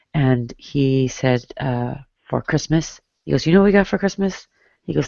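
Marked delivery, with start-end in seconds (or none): 3.4-4.4 put-on heavy, thick Spanish accent, pitched up. Retelling what a man raised in Colombia used to tell them, thick Spanish accent. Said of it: "He had a very thick Spanish accent".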